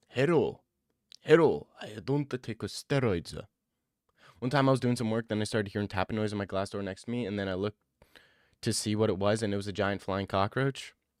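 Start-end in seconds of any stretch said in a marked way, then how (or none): 0.1-3.3 very slow, drawn-out put-on Japanese accent. Speaker imitates how some people talk, in a mock Japanese accent. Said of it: "It's more Japanese".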